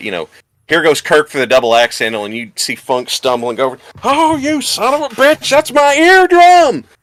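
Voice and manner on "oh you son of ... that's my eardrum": high, loud, slow shout of pain. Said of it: "you would hear Terry Funk shouting about it".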